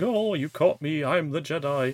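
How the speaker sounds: very theatrical, hammy, overacted stage-play delivery. Retelling a scene from a show: imitating a very theatrical delivery. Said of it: "a very theatrical going".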